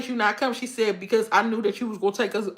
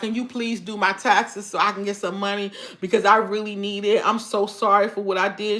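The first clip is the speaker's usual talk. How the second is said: put-on, earnest, imploring, begging tone. Retelling a former friend's request: imitating begging and pleading. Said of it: "She's just begging and pleading".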